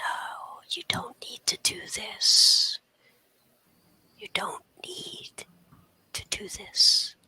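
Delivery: breathy, soft whisper close to the ear. Game master voicing a voice whispering in a player's ear: whisper in the ear. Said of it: "you hear a whisper in your ear".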